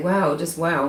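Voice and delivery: mock sarcasm, thick, dripping and laid on heavily. Imitating how Greg Hughes might react: imitating Greg Hughes, very sarcastic. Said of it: "very sarcastically".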